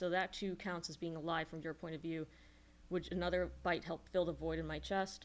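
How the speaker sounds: ordinary talk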